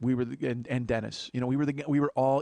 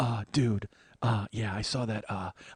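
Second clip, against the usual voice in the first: flustered, panicky voice, slow and halting; 4 semitones lower than usual. Retelling a friend's panicked call on the highway: imitating Jeff in a panic. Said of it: "I can do his voice".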